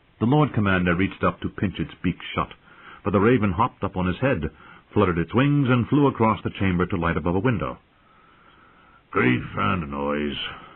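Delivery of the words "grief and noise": muttered, grumbling, complaining tone. After the raven flies off, the commander grumbles. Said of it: "Mormont grumbled".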